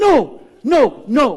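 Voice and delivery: loud high shout. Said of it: "And she goes".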